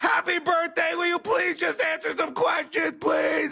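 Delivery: very high, pleading, begging voice. Retelling how a reporter asked the president questions: imitating someone begging. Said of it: "was begging the president for an interview".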